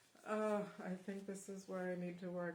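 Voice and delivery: words spoken on an audible sigh. Choosing what to work on next in a live reading, said with a sigh. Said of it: "I say that with a sigh".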